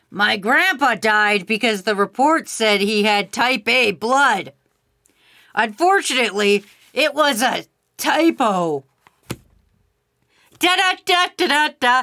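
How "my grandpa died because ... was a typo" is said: put-on voice of an elderly man, like a grandpa. Telling a bad joke for Big P, in an old man voice. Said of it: "I'm choking on my old man voice".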